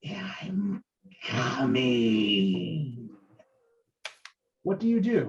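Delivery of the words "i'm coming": put-on zombie whisper, lower. Voicing a zombie pulling away from a player: zombie Estrella whispering. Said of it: "you can hear this whisper in your ear".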